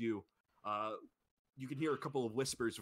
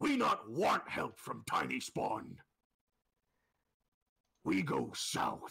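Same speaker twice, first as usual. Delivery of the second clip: big, booming, rough, resounding brute voice; 4 dB louder than usual. Voicing a character answering another's offer of help, in a booming voice. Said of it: "they speak in a booming voice".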